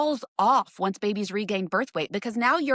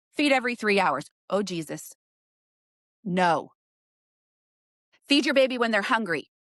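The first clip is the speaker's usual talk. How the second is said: angry outburst, out of breath. Speaker addresses you guys, getting angry and breathless. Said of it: "I'm losing my breath because I'm getting so pissed".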